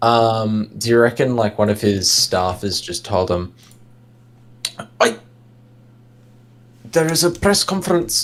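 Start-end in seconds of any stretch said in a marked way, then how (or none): 5.0-8.3 put-on South African accent, pitched up, every word. Imagining what one of his staffers told him, in a south african accent. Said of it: "I don't know why I'm doing a South African accent".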